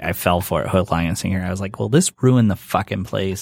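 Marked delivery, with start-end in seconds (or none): 1.8-3.4 put-on, imitated angry voice. Retelling falling for an April Fool's joke: imitating own angry reaction. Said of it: "and I'm like, all mad".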